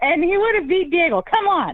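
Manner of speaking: heated high-pitched yell. Insisting a fighter would have won, over the phone: yelling at the phone. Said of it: "I'm yelling at my phone".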